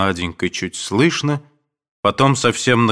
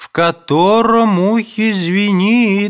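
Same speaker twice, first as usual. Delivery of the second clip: very high, drawn-out, impatient shout; 12 semitones higher, 4 dB louder than usual. A mother calls out from her room to a silent guest, shouting. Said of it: "кричала мать".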